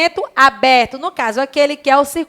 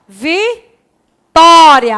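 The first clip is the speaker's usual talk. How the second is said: Vitória with the syllable tó hit hard; 2 semitones higher, 6 dB louder than usual. Portuguese lesson on acute accents: strong stress on tó in Vitória. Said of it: "olha a forma como eu falo ... a tonicidade é no tó".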